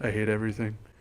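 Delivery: low, soft deadpan.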